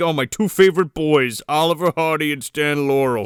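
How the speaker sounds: put-on drunk jolly voice. Retelling how the drunk Santa walks up: imitating drunk Santa Claus. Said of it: "He's like".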